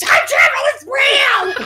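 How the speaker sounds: mock shrill, high, full-throated scream. Describing an Xmas gift of Bishop popping out of the bushes, imitating Bishop screaming. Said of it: "popping out of the bushes and screaming".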